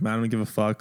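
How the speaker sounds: plain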